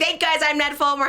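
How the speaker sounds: proud, announcing tone, pitched way up. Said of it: "He's like".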